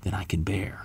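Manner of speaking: hushed, despairing whisper.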